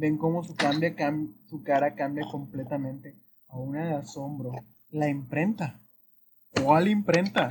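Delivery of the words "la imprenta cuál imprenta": put-on heavy regiomontano northern Mexican accent from Monterrey. Voicing a surprised character asking about the printing press: loud Monterrey-accented tone. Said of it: "con un tono muy fuerte, muy regiomontano".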